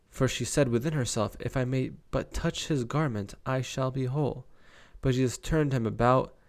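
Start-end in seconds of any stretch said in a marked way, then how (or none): none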